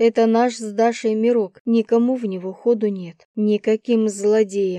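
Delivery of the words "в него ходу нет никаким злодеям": ordinary delivery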